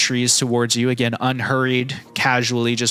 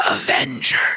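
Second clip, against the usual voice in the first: hoarse, raspy, rusty-sounding voice. Voicing a hooded creature answering the party: voice raspy from disuse. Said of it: "in a voice that's raspy from disuse".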